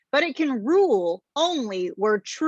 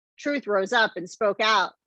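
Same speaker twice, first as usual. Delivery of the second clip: ordinary delivery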